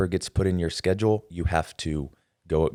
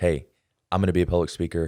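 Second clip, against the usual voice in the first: plain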